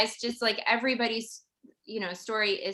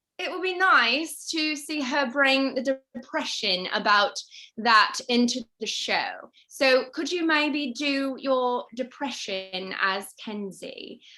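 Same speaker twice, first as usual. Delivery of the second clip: put-on British accent, read aloud; 2 semitones higher, 3 dB louder than usual. Reading viewer questions aloud on a dare, in a best-attempt British accent. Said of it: "I'm going to do my best British accent while reading".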